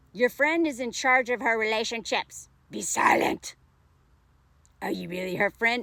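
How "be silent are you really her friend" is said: put-on demon voice, lower. Reading out a commenter's words to another speaker: demon voice. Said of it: "Demon voice".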